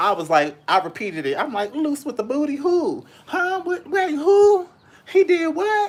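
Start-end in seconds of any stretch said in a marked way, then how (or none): 1.7-5.9 disbelief rising with each phrase, very high pitch. Retelling their reaction to surprising gossip, voice getting higher and higher. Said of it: "My voice got higher and higher".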